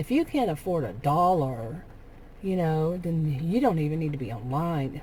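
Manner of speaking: plain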